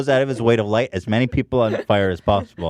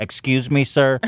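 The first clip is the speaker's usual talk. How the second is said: put-on politeness with a defensive, prickly edge; 2 semitones higher than usual. Mocking scooter riders pushing through a tight aisle: imitating a defensive scooter rider. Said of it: "They're super defensive".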